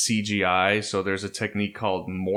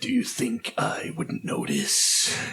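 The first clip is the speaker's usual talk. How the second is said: slow, drawn-out, self-serious, fully committed hero voice; 13 semitones higher than usual. Imitating a committed sound-booth line: Alec Baldwin's Shadow voice. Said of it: "the Shadow voice".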